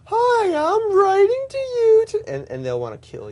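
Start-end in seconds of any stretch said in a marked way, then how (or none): 0.1-2.0 grating put-on voice, very high, very loud, very slow. Suggesting someone read others' posts back to them, in an annoying voice. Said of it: "use that voice".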